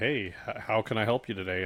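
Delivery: ordinary talk, nothing marked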